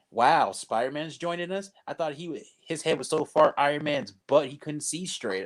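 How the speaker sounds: normal talking voice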